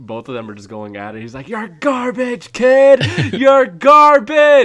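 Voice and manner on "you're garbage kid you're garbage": furious, very high, very loud, very drawn-out screaming. Retelling one player screaming at another during a game, retelling a scream.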